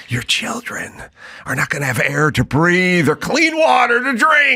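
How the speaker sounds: fake fear-mongering, fire-and-brimstone doom preacher voice. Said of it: "Fire and brimstone".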